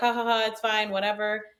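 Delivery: mock nervous laugh, imitated, brushing-off tone. Retelling how the drunk husband reacted when called out: imitating someone laughing it off. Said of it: "he was trying to laugh it off".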